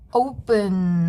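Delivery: open, slowly stressed on the first syllable.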